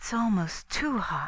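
murmured, murmuring. Mrs. Cavendish, fanning herself on a hot still night with two others, murmuring. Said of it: "she murmured".

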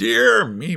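astonished, amazed murmur. The wizard looks at his pets after one of them speaks; astonished murmur. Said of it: "murmured the wizard, looking at his pets in astonishment".

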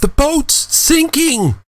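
sudden, very high-pitched cry. Ifufe calls out to the others as they surface: exclaimed. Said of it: "Ifufe exclaimed".

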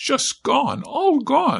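very high, slow, drawn-out, awed wonder. A woman sees the enemy fire wasps suddenly vanish: voice full of wonder. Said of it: "her voice full of wonder".

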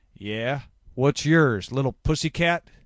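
sneering, loud and high. A narrator reads a man answering when asked his name, sneering. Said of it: "Looney sneered".

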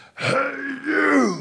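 very high, full-throated shrill yell, "you" drawn out. Retelling how a man on a four-wheeler yelled at him from the hill, retelling Dan's loud yell. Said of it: "he yells in the loudest voice".

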